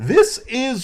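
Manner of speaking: voice breaking up, cracking very high. Introducing the next segment of the show, the speaker's voice cracks. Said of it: "Did you guys hear my voice crack?".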